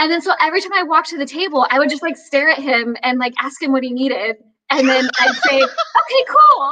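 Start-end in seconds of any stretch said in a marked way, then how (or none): 5.6-6.7 voice jumps up to a very high pitch. Retelling what the speaker would say to him at the table, voice jumping way up. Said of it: "my voice went up like 5 octaves".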